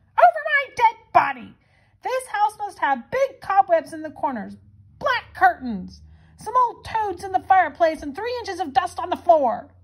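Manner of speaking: high, shrieking, screeching scream. An old witch responding to a family's plans for her house, screaming. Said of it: "screamed the old witch".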